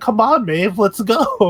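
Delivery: put-on breezy, easygoing tone. Retelling a character urging Maeve off a plane: imitating a nonchalant tone. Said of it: "he's so, like, nonchalant about it".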